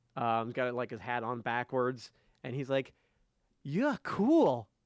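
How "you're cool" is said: put-on loud young boy voice. Voicing a little boy who taps a character's shin: eight-year-old boy voice. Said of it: "eight-year-old boy".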